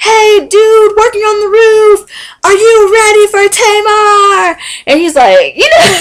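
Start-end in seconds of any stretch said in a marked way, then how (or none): 0.0-4.6 long, high-pitched shout. Retelling someone yelling at a worker on a roof: imitating Vince yelling. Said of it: "starts yelling at some dude".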